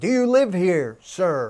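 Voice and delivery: put-on woman's voice, loud furious screaming. Telling a story about a stranger at the window, imitating a woman screaming at him. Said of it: "this woman is screaming at him".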